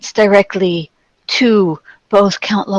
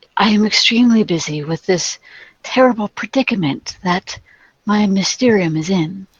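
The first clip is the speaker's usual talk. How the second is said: incredibly soft, gentle, hushed voice. Voicing a character who answers visitors' greeting, in an incredibly soft voice. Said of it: "she speaks with an incredibly soft voice".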